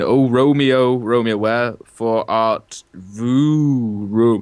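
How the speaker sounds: very slow, halting, stumbling monotone reading aloud. Retelling a guy in the back who could barely read Shakespeare: imitating a poor reader stumbling. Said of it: "this one guy in the back who could barely read, just going".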